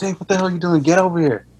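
put-on, high-pitched, hollered yell. Speaker recounting how a man yelled at him, retelling a yell. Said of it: "he was yelling at me like".

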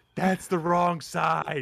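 mock whispering. Retelling a line from a game, whispering as Homer. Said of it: "in that voice, the whisper".

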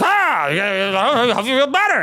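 animated character voice with swooping pitch. Retelling comforting an injured booker while staying in character: Tony Clifton character voice. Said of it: "still as the character where I'm like".

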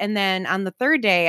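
ordinary talk, nothing marked

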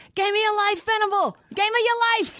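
very high, hollering, screaming cheer. Retelling a fan behind him at a ballgame yelling at a player; retelling a screaming fan. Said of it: "He just kept screaming that".

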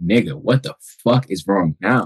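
mock-angry, put-on frustrated voice. Recalling how his father reacted to him crying, imitating the father's angry frustration.

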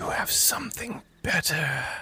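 whispered, hushed voice, high-pitched. Narrator voices a whisper the character hears in the quiet, whisper. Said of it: "you just begin to hear that whisper once again".

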